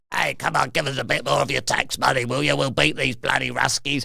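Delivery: roughened, creaky put-on voice. Joking about how a leader still talks: Zelensky voice. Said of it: "he still talks like this".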